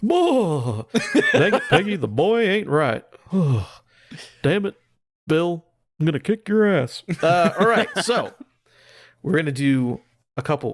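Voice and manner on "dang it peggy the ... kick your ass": animated character voice with wide, swooping pitch. Saying he could do Hank Hill's voice all day, then doing it: Hank Hill voice. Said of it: "I could do Hank Hill's voice all day".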